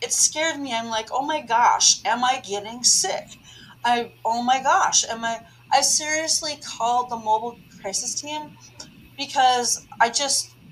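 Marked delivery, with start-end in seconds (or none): none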